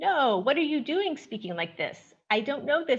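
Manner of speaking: high-pitched, embarrassed, objecting tone. Speaker recounts Amo's reply when spoken to in their dialect, imitating Amo, high-pitched. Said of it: "mimicking Amo with a high-pitched voice".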